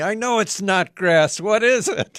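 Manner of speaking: very loud, high-pitched screaming. Retelling how a garden center customer finally reacted: imitating a customer screaming. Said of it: "finally he screams at me".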